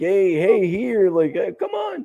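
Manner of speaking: mock shouting, high, swooping screamed call. Retelling how a player left hanging by the ref screamed: imitating someone screaming. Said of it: "he was screaming".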